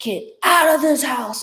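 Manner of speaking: strange, otherworldly, loud, high-pitched voice. Retelling commanding a presence out of the house: weird loud voice. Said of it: "this weird loud voice".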